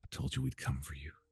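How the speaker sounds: quiet whisper. A character bends over an unconscious companion and whispers into his ear. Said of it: "she whispers into your ear".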